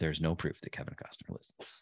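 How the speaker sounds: hushed, whispered voiceover narrator voice. Podcast host answers a co-host's claim about a listener, in narrator voice. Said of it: "Narrator voice".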